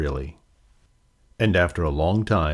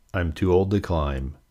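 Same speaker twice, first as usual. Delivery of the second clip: ordinary delivery, nothing marked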